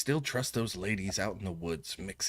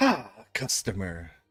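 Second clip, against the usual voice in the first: raised gnomish man's voice; 7 dB louder than usual. Voicing a gnomish man who greets a customer walking in: gnomish man's voice. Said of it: "gnomish man sitting at a".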